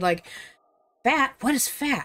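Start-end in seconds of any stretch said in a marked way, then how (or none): 1.0-2.1 high, eager, excited dog-like yelp. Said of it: "very excited".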